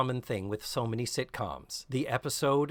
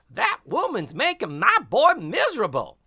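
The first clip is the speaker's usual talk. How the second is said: badly done, loud, swooping sing-song voice; 8 semitones higher, 8 dB louder than usual. Retelling a scene where a character repeats someone's sayings: horrible Mrs. Garrett impression. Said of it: "Tootie does a horrible impression of Missus Garrett".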